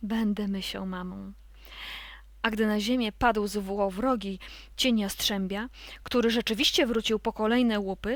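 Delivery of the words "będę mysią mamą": hushed, moved, soft, low half-whisper. The grey sock answers the little mice who ask her to stay: half-whispering. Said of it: "wyszeptała".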